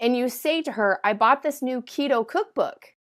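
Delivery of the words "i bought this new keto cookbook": question-like rising pitch on cookbook. Telling a friend about a new keto cookbook: question-like rise on cookbook. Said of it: "at the end of the statement, you have an intonation of asking a question".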